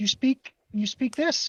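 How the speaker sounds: faltering, halting, broken Sylvan. Voicing a character speaking to an elf: speaking in broken Sylvan. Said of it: "in broken Sylvan".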